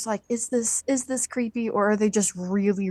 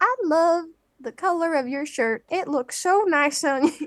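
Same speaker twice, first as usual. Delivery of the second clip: put-on high-pitched, sweet old-lady voice; 7 semitones higher than usual. Contrasting how an older gentleman and an older lady compliment: imitating a sweet old lady. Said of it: "This is my hypothetical old lady".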